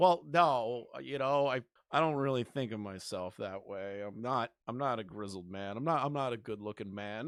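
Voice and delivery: meek, emasculated stammer full of self-doubt. Mocking someone after a woman compliments him: imitating an emasculated Idubbbz. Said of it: "he's just emasculated as fuck".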